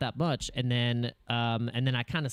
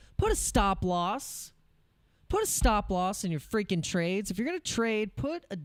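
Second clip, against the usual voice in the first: exasperated, frustrated, high-pitched shouting; 8 semitones higher than usual. Speaker tells viewers they're yelling at themself, not at them: yelling at oneself. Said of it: "I'm yelling at myself right now".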